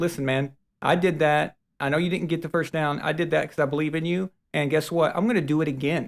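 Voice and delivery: plain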